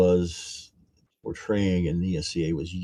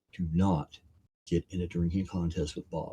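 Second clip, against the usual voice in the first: mock solemn, grave, dead-serious tone; 8 dB quieter than usual. Retelling a friend's warning before drinks, imitating a very serious warning. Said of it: "Gary turned to me very serious".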